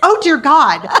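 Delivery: loud, blurted, horrified, shocked exclamation. Retelling own reaction at an event: imitating own loud exclamation. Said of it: "that really loud".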